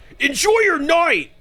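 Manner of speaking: angry, pitched very high, shrill and loud. Speaker repeats their own just-spoken line, mocking how it sounded: mock-angry repeat of own line. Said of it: "Why did I sound so angry".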